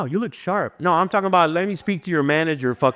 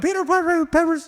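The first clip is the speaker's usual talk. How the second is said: very high, frantic, panicked fake babble, gibberish; 12 semitones higher than usual. Retelling panicking so people won't think you're with the devil: imitating panicked speaking in tongues. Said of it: "I would start panicking".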